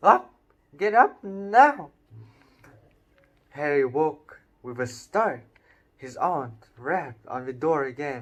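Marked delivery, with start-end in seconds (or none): 0.0-1.9 piercing, shrill, very loud screech. Reading a story aloud, the narrator voices the aunt waking her nephew, in a shrill voice. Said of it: "her shrill voice".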